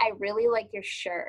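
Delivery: mocking, sarcastic, insincere, unconvincing tone. Showing how a compliment fails to sound convincing when it is sarcastic. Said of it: "if you sound sarcastic".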